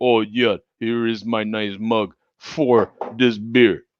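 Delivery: lousy put-on Russian accent. Doing his voice for a friend who doesn't live in Russia: put-on Russian accent. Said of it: "my Russian accent".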